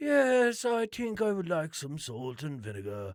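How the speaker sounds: high, swooping wildlife documentary narrator voice. Answering about salt and vinegar as David Attenborough: David Attenborough voice. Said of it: "I know I don't sound like him".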